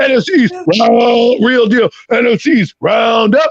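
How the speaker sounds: mock deep announcer voice, belted out slowly. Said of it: "let me try that again".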